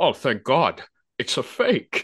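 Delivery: slow, drawn-out delivery with big pitch swoops. Quoting a line from a movie, Sean Connery impression. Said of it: "That's a really good impression".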